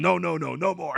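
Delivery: high, slow, creaky, rough voice with the nos drawn out. Retelling what he asks about her climbing: Mister Fuji voice. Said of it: "I don't know why he sounds like Mister Fuji".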